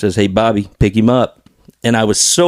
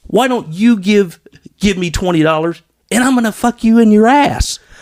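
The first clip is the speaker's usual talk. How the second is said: put-on furious scream, higher; 11 semitones higher than usual. Retelling how a man in a car screamed at Bobby: imitating someone screaming. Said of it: "he starts screaming at Bobby".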